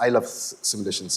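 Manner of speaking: whispered, breathy, sarcastic, ironic aside. Discussing what to look for in a startup, saying a line sarcastically. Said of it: "I'm saying it sarcastically though".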